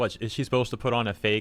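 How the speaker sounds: normal talking voice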